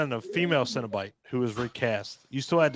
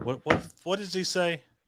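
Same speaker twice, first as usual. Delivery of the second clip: normal talking voice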